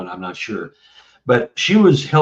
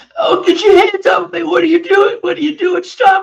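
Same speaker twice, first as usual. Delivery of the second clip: very high, loud mock child bawling; 5 dB louder than usual. Recalling talking like a ten-year-old boy once put under, retelling a bawling child. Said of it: "I was bawling".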